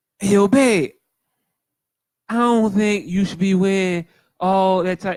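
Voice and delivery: very high-pitched put-on voice. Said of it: "I'll do my best reenactment of it".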